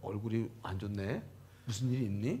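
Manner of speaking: low, soft, gentle, concerned king voice.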